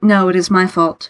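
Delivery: ordinary delivery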